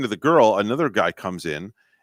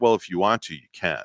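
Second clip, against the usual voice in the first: sassy, attitude-laden tone; 4 semitones lower, 5 dB quieter than usual. Retelling the clerk's answer about ordering at the counter: imitating an attitude-filled reply. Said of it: "with this attitude".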